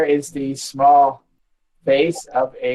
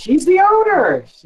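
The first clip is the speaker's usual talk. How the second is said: startled, surprised, very high raised voice; 5 dB louder than usual. A character answering a question about the owner, sounding surprised. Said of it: "she says, sounding surprised".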